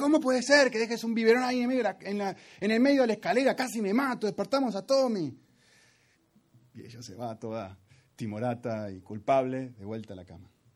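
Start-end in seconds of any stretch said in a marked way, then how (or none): 0.0-5.4 shrill, furious, very high-pitched, rattled-off rushed voice. Speaker reenacts what they said to their wife about the stairs, retelling an angry outburst. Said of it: "y le digo así con furia y enojo".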